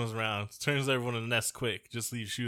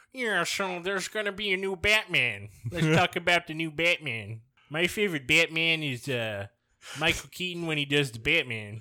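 high-pitched, nerdy movie podcast host voice; 6 semitones higher, 4 dB louder than usual. Mocking young movie podcasters, mock movie-nerd podcast voice. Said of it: "your movie nerd podcast voice".

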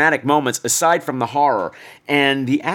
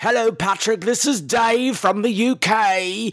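put-on very slow, high drunken drawl, phone-like voice; 7 semitones higher than usual. Recalling the time Dave phoned him, imitating drunk Dave. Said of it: "But you were really drunk".

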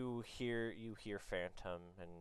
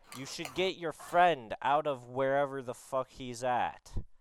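very loud, high-pitched shout projected far; 5 semitones higher, 12 dB louder than usual. A game narrator voices Sieres calling over to Phantom, Sieres yelling across. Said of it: "he yells over to you".

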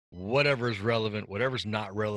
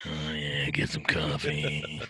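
creepy voice, much lower pitch; 6 semitones lower than usual. Podcast host doing a mock coffee sponsor read, in a creepy voice. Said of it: "You sounded a little creepy there".

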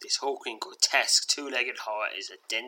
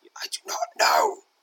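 harsh rasping whisper, lower; 6 semitones lower, 6 dB louder than usual. Reading a spirit's answer to the heroes aloud: harsh whisper. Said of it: "his voice little more than a harsh whisper".

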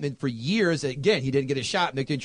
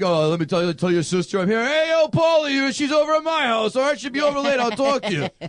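goofy, offbeat, quirky, dopey boxer patter; 9 semitones higher, 4 dB louder than usual. Imitating the quirky boxer character from the movie: quirky boxer impression. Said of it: "he's just so quirky".

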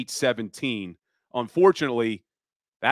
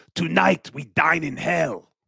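epic warrior-king impression, grand heroic delivery; 4 semitones higher than usual. Joking that the team has Leonidas at quarterback, doing a Leonidas impression. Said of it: "Sorry for my Leonidas impression there".

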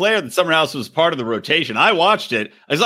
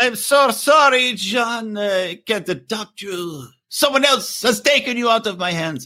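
failed Swiss accent attempt, pitched high; 5 semitones higher than usual. Voicing Odermatt addressing John, attempted Odermatt Swiss accent. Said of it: "That's not a Swiss accent".

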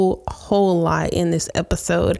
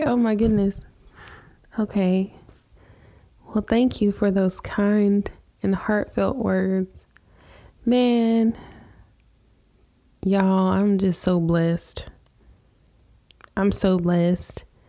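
slow voice, on the edge of crying. Thanking another speaker for kind, heartfelt words: on the verge of tears. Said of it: "I'm gonna need a second 'cause I'm about to cry".

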